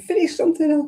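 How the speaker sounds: high, shrill, fed-up, exasperated angry shout. Retelling getting mad at the screen over unfinished projects, retelling shouting at the screen. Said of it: "I'm shouting at the screen".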